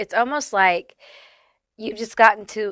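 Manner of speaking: voice breaking and cracking mid-line. Talking directly to a listener, voice cracking. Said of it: "my voice is cracking".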